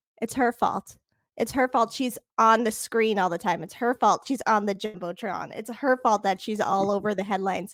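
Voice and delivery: plain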